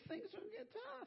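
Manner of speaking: voice shooting up, jumping very high. Voicing his words to Timothy, voice going high. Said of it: "Do you like the way my voice got high there?".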